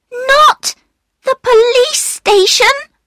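very high, loud calling out. Another voice from the darkness calls to a man, crying out. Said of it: "cried another voice".

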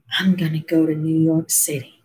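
very soft, quiet, hushed, barely audible. He speaks as the narrator, brother and sister lean in to hear: very soft voice. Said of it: "so soft my brother, sister, and I lean in to hear".

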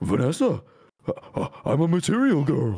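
very slow character voice, every word drawn out. Speaker retells what Freddy said to Vanessa, doing Freddy voice. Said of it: "I only know Freddy's voice".

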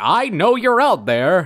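very slow, drawn-out announcer voice. Describing a creepy voice, the speaker mimics it: announcer impression. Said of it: "it's like an announcer".

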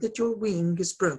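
plain

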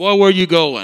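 loud, booming voice projected far. Heading for the playground, you suddenly hear Dad call out; do his words in a James Earl Jones voice. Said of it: "It sounded like James Earl Jones".

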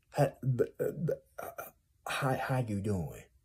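stammering, tongue-tied delivery with swooping pitch. Imitating tongue-tied people greeting someone: Mush Mouth voice. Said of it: "Mush Mouth from Fat Albert".

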